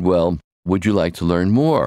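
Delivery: ordinary delivery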